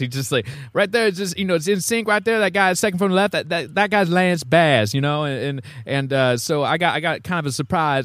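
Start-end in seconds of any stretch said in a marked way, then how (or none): 0.7-5.2 voice pitched up high. Retelling what the cousin said about a photo, imitating how his cousin talks. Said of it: "this is kinda how he talks".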